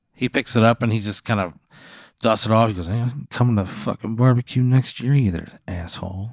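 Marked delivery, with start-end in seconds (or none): 2.9-6.3 muttering under breath. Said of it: "You hear him mutter that under his breath".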